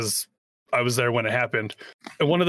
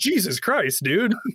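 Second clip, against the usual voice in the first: mock-startled outburst, higher and slower; 8 semitones higher than usual. Retelling how a guy jumped back when someone spoke right in his ear, imitating a startled exclamation. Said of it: "the guy jumps back and goes".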